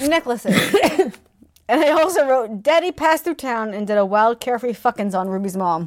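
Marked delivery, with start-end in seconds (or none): none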